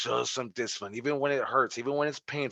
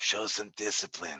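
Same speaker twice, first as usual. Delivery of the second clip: low, quiet, soft mutter; 4 semitones lower, 5 dB quieter than usual. Retelling Stu Hart wrestling a big guy in a movie, use a Stu Hart voice. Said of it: "in his Stu Hart voice".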